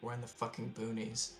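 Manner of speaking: sly, hushed, subtle whisper. Sitting down next to someone and telling them very subtly, whispering. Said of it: "I'm still whispering this to Hassini".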